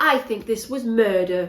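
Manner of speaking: really poor, put-on Yorkshire accent. Imitating how an annoying character talked, in a bad yorkshire accent. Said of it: "I can't do a Yorkshire accent either".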